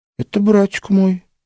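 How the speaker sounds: dutiful, compliant. Answering a man's question about a figure on an icon: obedient. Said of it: "послушно рассказала Маша".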